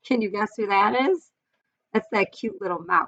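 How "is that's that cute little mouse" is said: ordinary delivery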